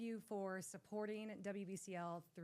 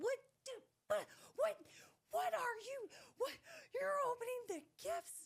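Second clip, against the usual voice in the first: acted-out angry, flustered stammer, very high, tumbling half-sentences; 4 dB louder than usual. Retelling the mother running down the steps: imitating a flustered angry mother. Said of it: "She is so flustered and so mad".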